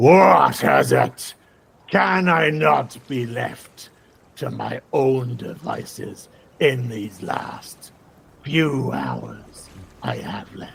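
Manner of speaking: scornful, sneering tone. A narrated character sneers out at the listeners as he speaks, sneering. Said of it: "sneers out at you and says".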